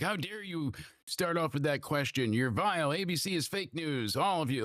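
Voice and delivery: high-pitched screaming rant. Retelling how Trump attacked the ABC journalist: imitating Trump screaming. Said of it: "screaming at her".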